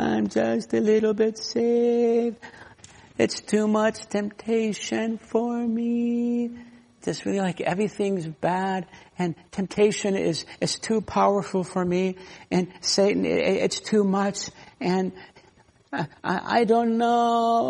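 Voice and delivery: high whine with "me" drawn out. Preaching about a low view of salvation, mimic a defeated believer: mock-whiny Eeyore voice. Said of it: "He kind of whines".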